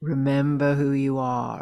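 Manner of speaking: very low voice welling up, deep and billowing. Retelling a voice heard inside oneself, really deep voice. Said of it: "like really deep voice".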